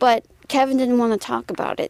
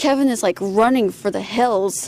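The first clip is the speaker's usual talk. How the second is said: ordinary talk, nothing marked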